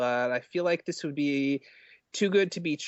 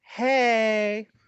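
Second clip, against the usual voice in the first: put-on girly voice, high, loud, drawn out; 7 semitones higher, 5 dB louder than usual. After apologizing to all women, speaker acts out a conversation in a girly voice. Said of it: "I'll do a girly voice".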